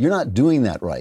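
plain

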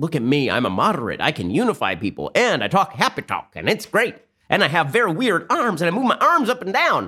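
weird, exaggerated Southern accent, sing-song and swooping. Act out how a self-described moderate started off, as Beto O'Rourke in a weird Southern accent. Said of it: "I don't know why I'm doing a sort of weird Southern accent there".

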